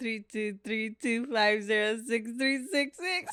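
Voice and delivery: laughing, giggling through the words. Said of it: "Why are you laughing?".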